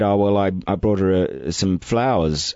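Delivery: plain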